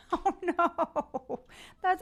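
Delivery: words breaking up with laughs. Reacting to a comment just read aloud, laughing while talking. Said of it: "I'm sorry I'm laughing".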